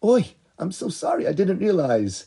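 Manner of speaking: sincere, earnest, well-meaning, slightly high-pitched tone. Showing how a girl would apologise for an honest mistake, in a sincere apologetic voice. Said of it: "You can tell in her voice that the girl had an honest mistake".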